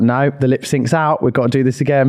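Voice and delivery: ordinary delivery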